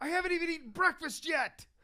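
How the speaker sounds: very high, flustered screaming. Recalling him at the top of the stairs, late for a game, imitating him screaming. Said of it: "he just screams".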